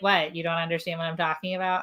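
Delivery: plain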